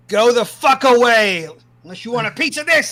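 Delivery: put-on very high drunken yelling. Player answers a knock on their inn room door; drunk, shouting. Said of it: "And drunk acting super".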